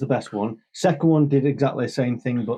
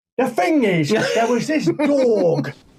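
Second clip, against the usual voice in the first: put-on very high English accent, "dog" stretched out; 10 semitones higher than usual. Speaker describing a clip to a co-host: Al Pacino English accent impression. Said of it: "Al Pacino doing an English accent".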